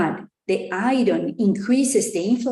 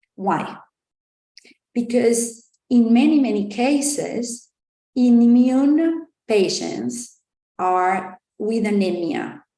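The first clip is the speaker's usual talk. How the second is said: slow, measured, deliberate explaining tone; 2 semitones higher than usual. Explaining a clinically important issue to listeners: speaking slower. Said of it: "I'm gonna speak slower now".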